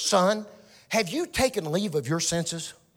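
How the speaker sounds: chiding, reproachful, motherly scolding tone. Retelling how mama questioned lost senses: imitating mama scolding. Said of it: "she'd say it like this".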